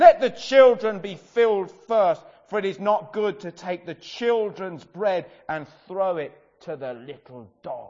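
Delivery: very loud, stern, severe voice. Speaker demonstrating how Jesus's reply might have been said: stern voice. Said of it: "you could almost say it with a very stern voice".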